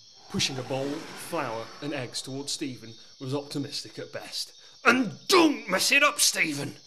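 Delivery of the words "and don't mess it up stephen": sharp, irritated, loud, high, bossy scolding bark. A bride-to-be, wound up by her reluctant groom, barks at him. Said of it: "[name] was not a happy lady. She was meant to wed [name] at noon sharp, but his reluctance to organise any of it was winding her up".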